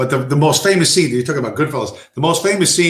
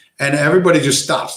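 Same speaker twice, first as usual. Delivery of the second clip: plain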